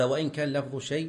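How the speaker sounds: ordinary talk, nothing marked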